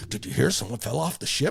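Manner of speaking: put-on giddy, breathy, half-whispered chatter. Retelling how people on the ship spread a rumor: imitating giddy gossip. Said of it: "how giddy people were".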